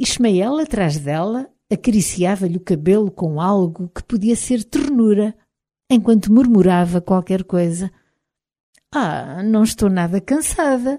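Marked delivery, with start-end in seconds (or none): 8.9-11.0 fond, loving, affectionate tone. [name], sitting by the fire, speaks to those around her; affectionate.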